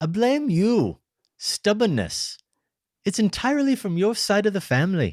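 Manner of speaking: very high-pitched put-on Scottish accent. Improvising an acted scene where both partners do accents, speak in a put-on accent. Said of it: "This time we both have to do accents".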